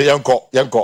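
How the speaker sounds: normal talking voice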